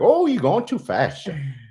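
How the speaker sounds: very high Cajun-accented navigation voice. Joking about a GPS that talks with a Cajun accent. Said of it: "if you speed and be like".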